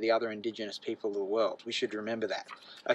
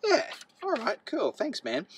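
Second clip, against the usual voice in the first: much higher mock casual tone. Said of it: "And I was like".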